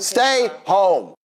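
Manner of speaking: high, angry, heated, laying down the law. Refusing to let a partner go on holiday: yelling. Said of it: "why he yelling at us".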